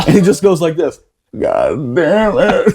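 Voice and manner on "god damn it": prayer-like words spoken to oneself. Retelling a corporal's words after his eyelids melted: imitating a quiet mutter to himself. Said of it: "he didn't say it real loud, but you can see he's, like, saying it to himself".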